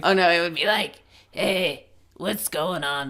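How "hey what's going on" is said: soft, slow, slobby, trashy alien voice, dragged out. Imagining meeting a trashy alien and voicing it: trashy alien voice. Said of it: "so that's what it would sound like".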